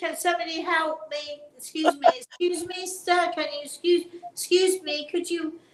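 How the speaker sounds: mock shouting. Describing waving arms at people who ignore you, retelling a shout for help. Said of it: "you're shouting".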